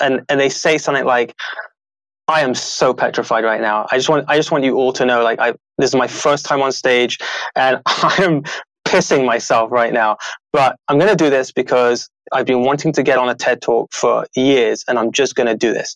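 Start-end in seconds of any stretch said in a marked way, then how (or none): none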